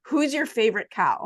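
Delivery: imitated blurting out. Retelling a stranger's question on a plane: imitating someone blurting out. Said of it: "the next sentence he blurts out is".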